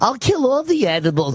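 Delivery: high, mocking, whiny voice.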